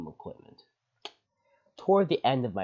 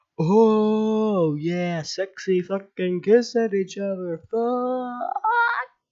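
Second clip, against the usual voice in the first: high, loud, mocking, jeering holler. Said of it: "They start hollering".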